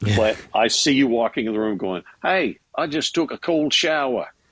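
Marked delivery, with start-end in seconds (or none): 2.2-4.3 clumsy, poor put-on Australian accent, pitched up. Imagining someone walking into the room: poor imitation Australian accent. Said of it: "please forgive me for trying to emulate the accent".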